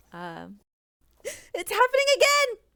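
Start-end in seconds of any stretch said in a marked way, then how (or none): 1.2-2.5 shrill, very high, very loud character voice. Asked by the others to give an impression of the character, talking like the character. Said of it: "Give us your impression of the".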